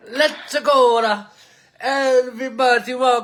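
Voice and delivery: put-on Italian accent, high and drawn out. Show host opens the episode in a put-on Italian voice. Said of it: "I'm not going to do the Italian voice the whole show".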